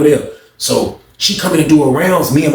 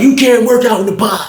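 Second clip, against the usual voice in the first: play-acted barking delivery, pitched higher; 8 semitones higher than usual. Retelling how an officer ordered a man to stop: imitating a barked order. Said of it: "She sounded like she was, like, barking at him".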